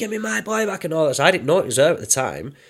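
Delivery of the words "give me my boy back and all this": shrill, very high scream. Speaker recounts a woman screaming at them, retelling her scream. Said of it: "this woman's screaming at me".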